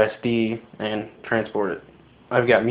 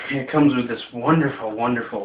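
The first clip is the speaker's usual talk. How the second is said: sarcastic, mock-admiring tone; 3 dB quieter than usual. Reviewing a new device and showing the case it comes with: sarcastic. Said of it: "as you can see I'm being sarcastic".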